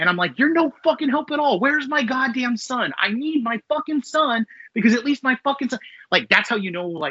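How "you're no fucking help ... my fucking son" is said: very high, furious cursing rant. Retelling yelling at a game's helper character: imitating himself yelling angrily. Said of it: "I'm yelling at it as though it's a real person".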